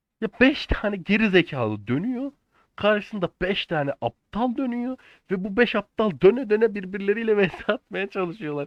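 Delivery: high, shaking, furious, raging voice. A longtime player ranting about how the game is played, shaking with anger. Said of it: "Elim sinirden, elim ayağım titriyor".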